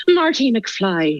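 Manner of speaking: put-on slow, high, awful Irish accent.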